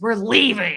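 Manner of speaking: loud growl pushed right through the throat. Retelling the story, the speaker acts out the man's reply, growling through the throat. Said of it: "he growled through his throat".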